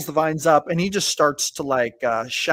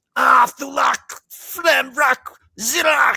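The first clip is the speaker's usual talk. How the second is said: shrill, very high, very slow, drawn-out pained shout; 9 semitones higher, 4 dB louder than usual. Narrating a fleeing figure crying out as he burns: shouting in pain. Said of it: "you hear him shout".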